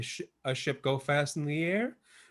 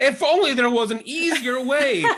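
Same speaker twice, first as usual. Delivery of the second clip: very high, very loud, drawn-out mock infomercial exasperation; 11 semitones higher, 9 dB louder than usual. Acting out a clumsy person in an infomercial knocking containers off a shelf: mock infomercial frustration. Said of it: "goes to pull down".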